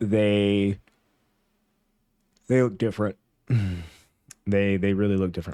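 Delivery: yawning between words while talking. Talking about Ohio State and Georgia, the speaker keeps yawning while talking. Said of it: "I don't know why I'm yawning so much".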